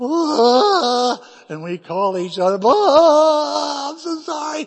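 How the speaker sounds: tearful, high, loud, overjoyed cry.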